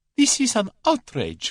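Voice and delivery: shrill, frantic, hysterical outburst, very high pitch. Narrator reads the Russian crying out to Julius, hands up: high hysterical voice. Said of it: "cried the Russian in a high, hysterical voice".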